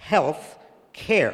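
both words health and care strongly stressed. Repeating the phrase in a back-and-forth, stress on HEALTH and CARE. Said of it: "very strong emphasis on the word care".

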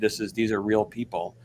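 usual speaking voice

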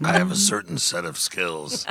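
creepy voice with swooping pitch. Speaker suddenly sounds like Liam Neeson: creepy Liam Neeson voice. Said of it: "That was Liam creepy".

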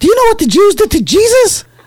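very high-pitched put-on voice. Retelling what a jealous person asked the speaker: imitating his high-pitched voice. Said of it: "like in his high-pitched voice".

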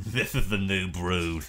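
very sinister, menacing delivery. Retell what Gangrel said after Matt took the mic, imitating Gangrel's most sinister voice. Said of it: "in his most sinister voice".

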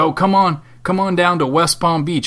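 put-on southern US accent. Speaker imitates a man urging a visit to West Palm Beach: put-on southern accent. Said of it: "I'm saying it in a southern accent".

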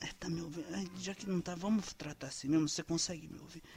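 very quiet, soft whispering voice. Showing how to talk to a telemarketing caller: very quiet voice. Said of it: "você começa a falar bem baixinho com ela".

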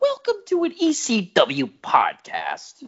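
very high, swooping, drawn-out voice. Opening the podcast: Bruce Prichard doing a Paul Heyman impression. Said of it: "my Bruce Pritchard doing a Paul Heyman impression".

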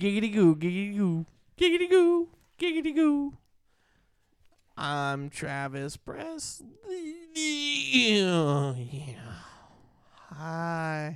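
put-on leering cartoon lecher voice. Acting out a man introducing himself as Travis Presley, in a Quagmire and Herbert mix voice. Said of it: "You sound like a mix of Quagmire and Herbert the Pervert".

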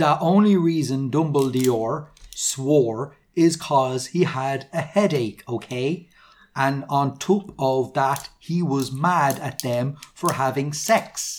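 ordinary delivery

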